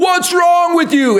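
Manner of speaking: play-acted, very high, shrill, fed-up screaming. Retelling a fight with a broken printer: retelling screaming at printer. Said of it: "screaming at my printer".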